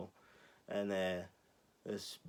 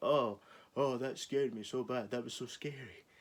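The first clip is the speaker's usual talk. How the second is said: put-on fright played for laughs, joking; 4 semitones higher than usual. Retelling people in a cinema joking: imitating mock-scared joking. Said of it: "a bunch of people were trying to be comedians".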